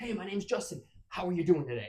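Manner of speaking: high, hyper, overexcited, overdone. Showing an annoying, too-much way to greet someone: overexcited, too much. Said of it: "you're just being too much and extra".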